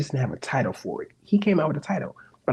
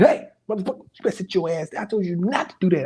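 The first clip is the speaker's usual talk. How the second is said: put-on yelling scolding voice, higher pitch; 4 semitones higher than usual. Retelling how God talks back in rough dialect: imitating God yelling. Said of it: "he be like".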